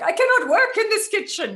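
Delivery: very high, loud put-on German accent. Speaker quotes their mum's family-joke exclamation in her German accent. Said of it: "in her German accent".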